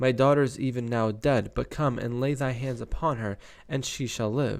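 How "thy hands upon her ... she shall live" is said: normal talking voice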